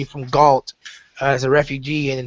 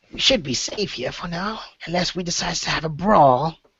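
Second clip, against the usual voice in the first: put-on female lizard creature voice, higher pitch; 3 semitones higher than usual. A player redoes a line as her lizardfolk companion: lizardfolk woman's voice. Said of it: "this is how she talks".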